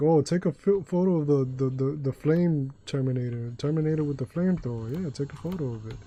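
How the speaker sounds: usual speaking voice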